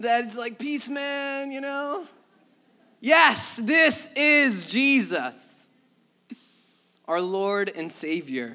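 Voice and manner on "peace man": put-on loving hippie voice, higher. Speaker mocking how TV portrays Jesus, in a loving hippie voice. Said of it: "the loving hippie that we talk about".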